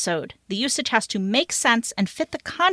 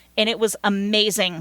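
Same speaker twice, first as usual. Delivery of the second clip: ordinary talk, nothing marked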